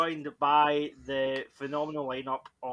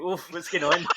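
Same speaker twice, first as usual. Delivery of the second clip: ordinary delivery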